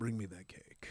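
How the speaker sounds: low, hushed, dominant, commanding voice. Asked to demonstrate a Dom voice for listeners, dominant commanding voice. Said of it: "demonstrate Dom voice for".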